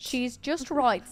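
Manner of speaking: horrible mock British accent. Admiring the finished water wheel build, speak in a bad put-on British accent. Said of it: "make us want to talk in a British accent".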